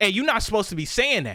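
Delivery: mock angry grown man's voice, irate. Retelling a customer scolding him: imitating an angry man. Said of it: "literally like that, like a grown-ass man saying it".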